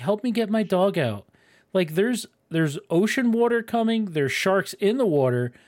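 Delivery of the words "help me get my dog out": mock, mild, held-in, half-voiced yelling. Retelling a movie scene of a woman by a car: imitating someone yelling. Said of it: "standing next to the car yelling".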